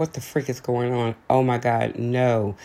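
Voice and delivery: plain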